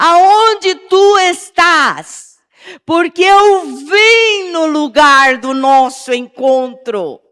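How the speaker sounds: loud, high, slow, pleading crying call.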